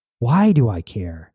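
ordinary delivery

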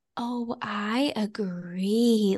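mock, syrupy, overly sweet voice, laid on thick. Retelling her reply to a request, imitating an overly sweet voice. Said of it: "her keep sweet voice was, like, very, very extra".

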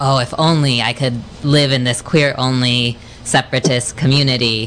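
usual speaking voice

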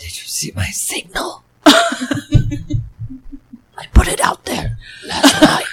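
hoarse, shrill, very loud, high, swooping rasp. Friends take turns doing their Batman; this speaker's try: Batman voice with laryngitis. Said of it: "That's Batman with laryngitis".

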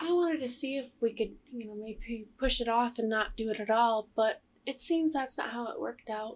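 nonchalant, youthful, matter-of-fact delivery. Retelling an interrogation, imitating Morgan: imitating a young, matter-of-fact girl. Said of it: "it was just the way that she says it".

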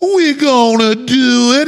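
high-pitched put-on Louisiana accent. Retelling how a flown-in executive talked at a trial, imitating a coon-ass accent. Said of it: "he's got this coon-ass accent".

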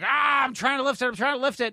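screeching, very high-pitched scream. Retelling a film scene where Thor tries to lift Mjolnir, retelling Thor screaming. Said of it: "he's like screaming".

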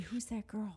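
mock, soft, unvoiced, secretive whisper.

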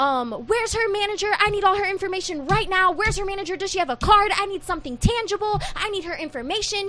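shrill, very high, frantic, demanding yelling. Retelling what their Tita shouted at the family, retelling a yell. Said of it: "She's like yelling at everybody".

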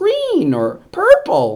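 tiny, very high-pitched, swooping piping little voice. Describing quizzing Griff on colors, imitating Griff's high-pitched voice. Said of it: "in his kind of like high-pitched voice".

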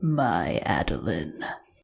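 very low, deep, creepy, sinister villain voice. Imitating an audiobook reader's voice for the villain: creepy deep voice for Luke. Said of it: "a very good, like, creepy, deep voice for Luke".

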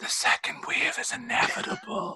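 slow, hushed, drawn-out whisper. Imagining someone sitting down beside you in bed: imitating a whisper. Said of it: "just kinda whispers".

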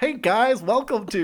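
attempted American accent. Prompted by the other speaker to do an American accent: American accent. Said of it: "do your American accent there".

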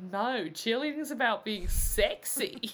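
slow, put-on Australian accent. Retelling what she says about cheerleading: Australian accent. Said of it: "I've missed your Australian accent".

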